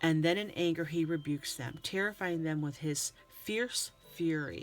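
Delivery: ordinary talk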